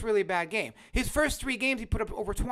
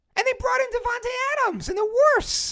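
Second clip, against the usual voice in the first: high-pitched voice, higher and louder; 14 semitones higher, 7 dB louder than usual. Complaining passionately to another speaker, voice getting really high. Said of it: "And my voice just got really high".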